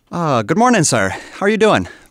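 slight Irish brogue. Asked for accents back to back, the speaker starts with a little Irish brogue. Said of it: "Let's start with a little Irish".

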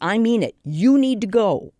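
mock stern, deliberate tone. Retelling how she orders deer out of her garden from the window, retelling a stern warning. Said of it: "said sternly".

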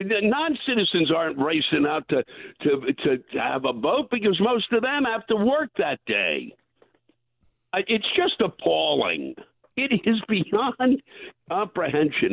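shouting. An interview guest who admits yelling through the entire interview, yelling. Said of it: "I can't believe I'm yelling through the entire interview".

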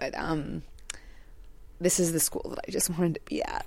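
teary, hushed, breathy, near-whispered voice. Teacher, asked why she wanted to join the dual language program, tearing up. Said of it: "I'm like tearing up".

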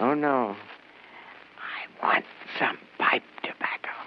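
speaking in a whisper. A late customer asks the shopkeeper for pipe tobacco, whispering. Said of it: "what are you whispering about?".

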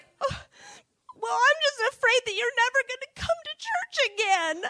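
put-on high-pitched bawling, speaking through tears. Retelling what Jenny said, the speaker imitates Jenny bawling. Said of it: "instead she's bawling".

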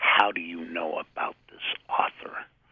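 acted-out breathy, whispered, accusatory tone. Retelling how they query customers about an author: imitating own accusatory tone. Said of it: "I sorta do it in an accusatory tone".

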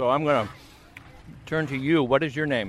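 speaking through a mouthful of food. Interviewer on a bike ride turning to someone, talking with mouth full. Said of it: "I've got a mouthful of pickles".

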